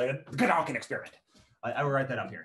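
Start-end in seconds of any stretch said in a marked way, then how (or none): 0.0-1.1 put-on angry, cross-sounding German accent. Speaker explaining a term to listeners, saying it in an angry german accent. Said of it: "you have to say that with an angry German accent".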